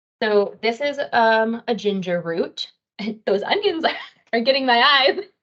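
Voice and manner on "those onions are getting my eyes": teary-eyed laughing, pitch a bit higher. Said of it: "getting teary-eyed over here".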